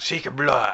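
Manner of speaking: put-on Russian accent. Joking with co-hosts about having to learn Russian, doing a Russian accent impression. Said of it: "That was a really good Russian impression".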